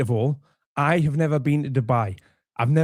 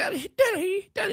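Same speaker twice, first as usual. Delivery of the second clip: very high, breaking, cracking squeak; 4 dB quieter than usual. A speaker mocks how Danny's voice cracked calling for his dad; imitating Danny's cracking voice. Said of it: "Notice Danny's voice is breaking".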